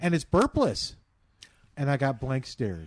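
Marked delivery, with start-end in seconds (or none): 0.0-1.0 mock thrilled, eager, very excited, pitched-up voice. Retelling what they told people earlier, in a mock-excited voice. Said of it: "with a very excited voice".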